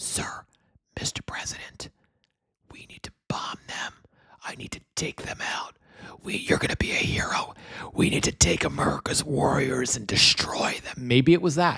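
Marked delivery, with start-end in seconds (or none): 0.0-10.9 put-on boozy, drunken whisper, very close. Imitating someone drunk whispering advice to the President: imitating drunken Pete Hegseth whispering. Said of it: "drunken Pete Hegseth whispering in his ear".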